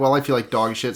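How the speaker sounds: ordinary delivery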